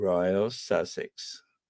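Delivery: deep, breathy, low masculine-sounding voice. Showing how to say the sign-off with bass: deep Princess Anne voice. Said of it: "You gotta butch it up a bit".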